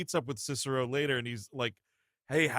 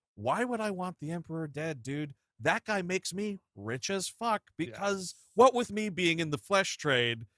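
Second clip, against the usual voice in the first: put-upon, griping, complaining tone, pitched up; 5 semitones higher than usual. Retelling a film scene, voicing Proximo, mock Proximo complaining. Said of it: "I love Proximo complaining".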